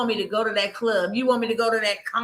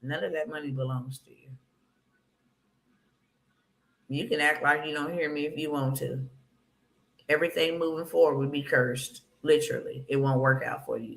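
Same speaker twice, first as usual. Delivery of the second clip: put-on small, stern voice, lower and quieter; 7 semitones lower, 5 dB quieter than usual. Speaker recounts the voice heard after getting twelve thousand: retelling a small, stern voice. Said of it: "that still small, stern voice".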